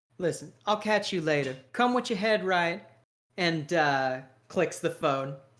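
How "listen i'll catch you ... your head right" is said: sly, knowing, smirking tone. Voicing a character ending a phone call: sly smirk in his voice. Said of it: "with a sly kinda smirk in his voice".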